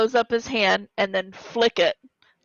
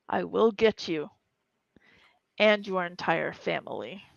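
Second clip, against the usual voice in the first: through gritted teeth, lower and quieter; 2 semitones lower, 6 dB quieter than usual. Voicing the reply of the thing just activated, through gritted teeth. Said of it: "a response through gritted teeth that says".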